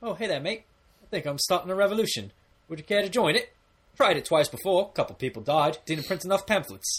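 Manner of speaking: polite, friendly voice, pitched slightly up. Retelling a movie scene, imitating Korg inviting someone to a revolution: polite Korg voice. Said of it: "he's very polite. He's like".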